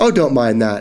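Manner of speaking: ordinary delivery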